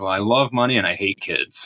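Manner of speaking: thickly sarcastic, dripping, heavy sarcasm. Retelling a teacher's answer on why they teach: imitating heavy sarcasm. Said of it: "just dripping with sarcasm there".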